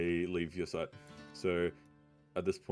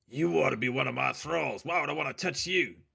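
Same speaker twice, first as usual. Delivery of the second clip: disgusted character voice, higher pitch and louder; 8 semitones higher, 5 dB louder than usual. A player tries to high-five Chief Yorb on the way out, disgusted. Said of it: "in disgust".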